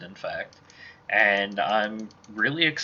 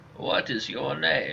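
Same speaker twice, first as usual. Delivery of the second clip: put-on elderly man voice. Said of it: "my default old man voice".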